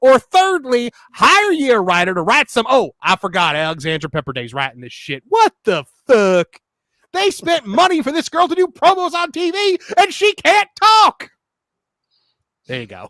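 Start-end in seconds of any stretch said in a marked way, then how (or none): 0.0-11.3 angry ranting commentator voice, higher and louder. Doing an impression of Jim Cornette ranting about a wrestler's promo: Jim Cornette impression. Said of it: "I'm gonna do an impression".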